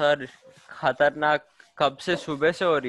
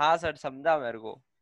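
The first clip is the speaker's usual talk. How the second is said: ordinary talk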